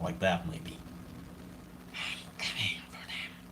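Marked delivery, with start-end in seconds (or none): 1.9-3.3 very quiet, hissing whisper from afar. Trying the line again after asking how to say it, hissing. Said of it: "how do you say in a hissing way".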